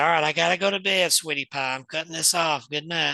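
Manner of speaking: put-on lilting sing-song voice, as if speaking to a child. Retelling talking to a child spirit late at night: sing-song voice. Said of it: "this sing-song voice, like I'm talking to a child".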